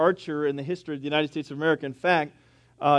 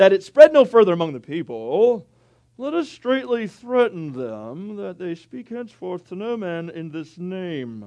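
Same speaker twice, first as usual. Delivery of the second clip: put-on loud, swooping kids' cartoon vegetable character voice; 3 semitones higher, 5 dB louder than usual. Reading a Bible passage aloud, in a VeggieTales voice. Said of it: "That was my VeggieTales voice".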